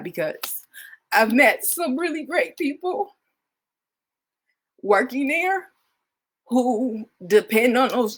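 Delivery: high, halting, breaking voice fighting back tears. Sharing news about people they met who depend on those jobs, holding back tears. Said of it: "I'm trying not to cry".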